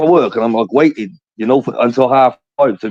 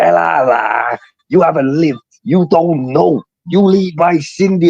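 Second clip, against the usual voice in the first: put-on half-managed, pitched-up Scouse accent; 5 semitones higher than usual. Retelling what a man said to him, imitating that man's accent. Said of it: "what was that accent? He's like".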